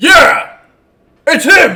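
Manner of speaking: loud yelling. Answering another player's question about the client, yelling. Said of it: "Why are you yelling?".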